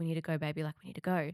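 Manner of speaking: put-on whisper. Retelling her mum waking her in the night, imitating mum's whisper. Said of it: "she's whispering and she's like".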